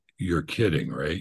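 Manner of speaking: ordinary delivery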